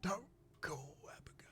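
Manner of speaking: soft, breathy whimper, barely a whisper. A man pleading with someone not to make a call: soft whimper. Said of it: "He whimpers softly".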